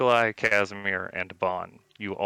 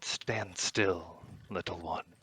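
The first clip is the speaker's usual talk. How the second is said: slow, hushed whisper, close in at the ear; 9 dB quieter than usual. Narrator voicing a voice that whispers in a player's ear, whispering. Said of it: "whisper in your ear".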